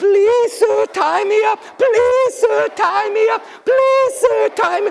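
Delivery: very high tiny creature voice, sobbing, pleading. Telling a story, voicing little creatures in the grass: imitating little creatures crying. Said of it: "poor little creatures crying out for help".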